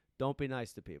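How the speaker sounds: put-on New York accent.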